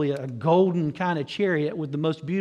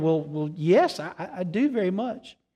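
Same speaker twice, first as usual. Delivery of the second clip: mock stammering, slowed down. Telling a story, the speaker quotes a startled man answering the old granny, stammering. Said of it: "he sort of stammered".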